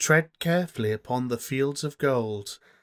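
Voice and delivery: spooky, whispery narrator voice, high and slow.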